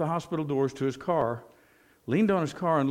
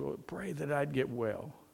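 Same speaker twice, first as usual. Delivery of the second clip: very faint, soft, weak, barely-there voice; 8 dB quieter than usual. Retelling what a woman lying in bed told the man offering prayer, very faint voice. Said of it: "in a very faint voice".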